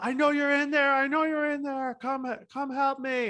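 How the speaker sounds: mock screaming, high and loud. Retelling how a man at the door screamed for help: imitating a man screaming. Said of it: "And he's screaming".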